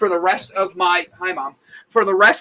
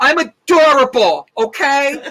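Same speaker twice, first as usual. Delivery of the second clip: high, babyish, whiny put-on voice; 7 semitones higher, 4 dB louder than usual. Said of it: "Especially in my whiny voice".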